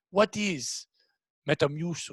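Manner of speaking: put-on Eastern European accent, put on. Retelling a coworker asking about a product: imitating a coworker's Eastern European accent. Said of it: "the European lady goes".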